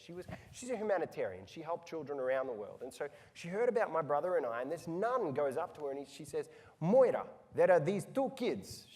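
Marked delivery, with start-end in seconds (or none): 6.8-8.9 put-on very loud, high, botched Albanian accent. Retelling what a nun told someone, in a bad Albanian accent. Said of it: "She didn't actually sound like that. I just can't do an Albanian accent".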